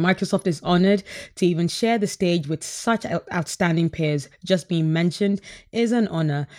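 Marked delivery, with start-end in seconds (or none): none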